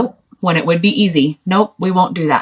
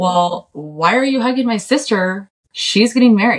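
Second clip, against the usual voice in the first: mock confrontational tone, full of attitude; 4 semitones higher than usual. Retelling scolding a cowboy for hugging a sister: imitating own past attitude. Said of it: "super attitude".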